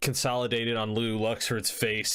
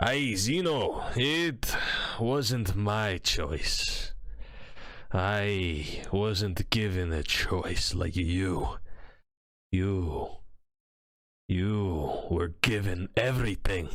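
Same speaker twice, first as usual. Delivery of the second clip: speaking through a hearty belly laugh; 2 semitones lower than usual. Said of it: "always begins every sort of sentence with a huge belly laugh".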